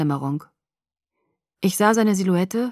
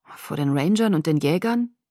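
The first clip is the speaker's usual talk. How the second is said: ordinary delivery, nothing marked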